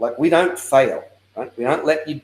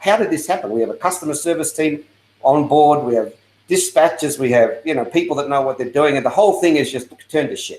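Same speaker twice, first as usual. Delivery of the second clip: ordinary talk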